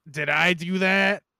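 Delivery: very slow, put-on salty New York accent. Speaker in the middle of a review, slipping into a salty New Yorker voice. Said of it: "doing that fucking like New York, like salty ass New Yorker voice".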